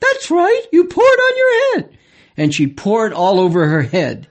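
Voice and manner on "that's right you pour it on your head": very high, sing-song, lecturing lady's voice. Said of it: "Then Missus Pillsbury would say".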